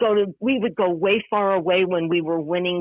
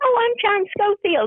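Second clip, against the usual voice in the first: put-on small, high-pitched little boy voice; 14 semitones higher than usual. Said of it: "he was this little high pitched voice".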